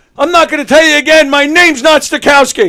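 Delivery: mock furious yell, very high, very loud, shrill. Telling a joke, acting out the fed-up man: acting out an angry outburst. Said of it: "Slams his stuff down, stands up".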